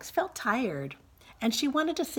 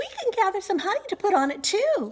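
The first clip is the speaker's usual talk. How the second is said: very high, squeaky, tiny voice; 11 semitones higher, 4 dB louder than usual. Narrator reads the three bears waiting for porridge to cool; Baby Bear's squeaky tiny voice. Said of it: "squeaked Baby Bear in his tiny little voice".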